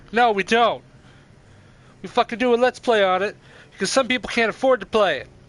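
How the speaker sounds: loud shouting yell. Recording a Let's Play, unable to hear themselves, yelling. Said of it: "I'm sorry that I'm yelling".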